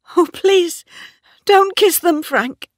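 desperate, very high, loud pleading cry. At the coffin, a woman begs a man not to kiss them, crying out pleading. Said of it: "cried Bathsheba".

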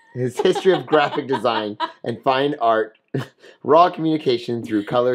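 speaking while laughing and giggling.

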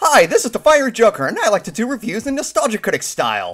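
loud, shrill, belted high with big pitch swoops. Doing an impression of Josh Scorcher on request: Josh Scorcher impression. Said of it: "Do an impression of Josh Scorcher".

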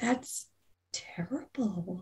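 very hushed, soft, worried, concerned voice. Voicing a woman who hears someone is deceased, concerned. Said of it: "She looks very concerned".

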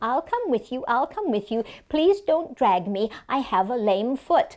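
plain

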